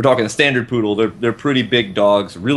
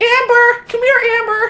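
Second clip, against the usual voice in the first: put-on, girly, very high, drawn-out Jersey housewife voice. Recalling calling the dog amber over, in a jersey housewife voice. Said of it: "a Jersey house housewife voice".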